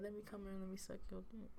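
fake crying with a pleading tone. Acting out own future plea to be let in: mock crying. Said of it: "I'ma cry and say".

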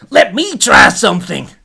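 very loud, high character voice. Narrating a story where Chip questions a demon: loud Scoot voice. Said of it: "It's so much louder than Scoot normally is".

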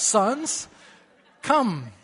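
solemn, dignified, pulpit-style pastor's voice. Retelling calling down the aisle after the sons, in a dignified pastor's voice. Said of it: "in a dignified pastor's voice".

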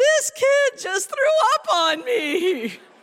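shrill, very loud, high-pitched crying outburst. A teacher recounts answering the principal, retelling a cried-out reply. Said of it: "Of which I cry back".

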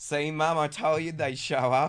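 very loud, drawn-out, high yell. Retelling how he yelled into the courtroom to his mum, retelling a yell. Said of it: "he just yells into the courtroom".

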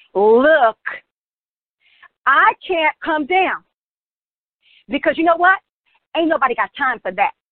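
blunt street-style talk.

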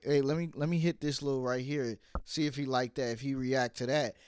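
usual speaking voice

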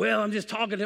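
put-on raspy voice. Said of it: "he had a raspy voice".

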